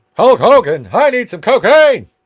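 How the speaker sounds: very high, loud, belted-out interviewer voice. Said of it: "in that distinctive voice of his".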